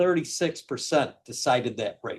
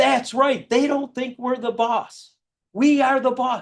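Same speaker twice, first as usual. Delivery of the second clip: put-on shrill scream, pitched very high; 10 semitones higher than usual. Retelling how an elderly gentleman at a door reacted: imitating a man screaming. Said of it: "He starts screaming".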